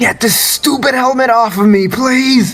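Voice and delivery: screaming in pain. Voicing a character pleading with a goddess for help: screaming in pain. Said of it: "Still screaming in pain".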